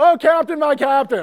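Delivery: mock very high, blurted, yelled-out outburst. Retelling how he yelled it out early during the buildup, retelling a yell. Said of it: "he just yells out".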